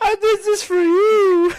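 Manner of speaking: wrestler voice with put-on tears. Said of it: "Bianca Belair and Naomi crying".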